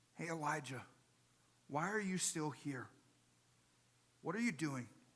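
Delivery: soft, gentle, calming, soothing half-whisper. Retelling God's question to Elijah a second time: gentle soothing half-whisper. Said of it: "in a gentle, soothing whisper".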